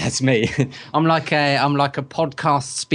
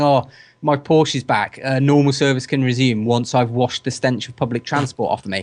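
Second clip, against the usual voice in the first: ordinary talk, nothing marked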